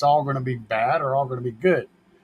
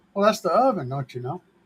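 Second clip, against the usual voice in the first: put-on Canadian accent done as a bit; 3 semitones higher than usual. Answering people who ask about the kitchen oven, put-on canadian accent. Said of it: "That's my my uh, Canadian accent there".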